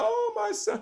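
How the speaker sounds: very high, fake-crying, sobbing lament. Acting out his mother mourning him after his death, imitating a mother crying.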